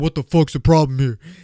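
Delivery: fake deep macho voice. Retelling a guy confronting him at the bathroom line: put-on lowered masculine voice. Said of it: "you can tell that I'm lowering my voice".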